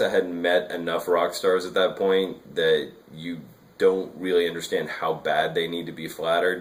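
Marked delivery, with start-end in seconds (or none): none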